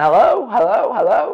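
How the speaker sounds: high, loud shouting. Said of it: "I'm shouting".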